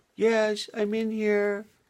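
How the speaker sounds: small, tiny little voice, very high and very slow. Narrator reading a baby bird answering its mother from inside the egg, in a little voice. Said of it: "there came out a little voice".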